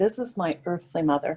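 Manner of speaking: plain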